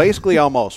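high Southern drawl. Commenting on a contest payout, southern accent slipping out. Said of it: "Did your Southern accent just come out on that?".

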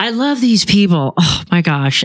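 over-the-top, heavy sarcasm. Talking about people who give credit card balance advice, most sarcastic. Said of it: "I say that in the most sarcastic manner possible".

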